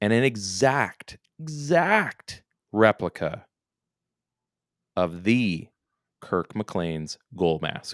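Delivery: unhurried, relishing every word, exact drawn out. Describing Thatcher Demko's new goalie gear, talking slowly, savoring every word. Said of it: "I'm talking slowly because I want to savor".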